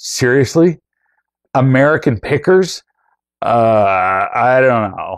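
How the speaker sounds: a particular tone with a drawn-out uh. Retelling a woman's reaction, imitating her tone of voice. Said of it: "I just got her tone of voice perfectly".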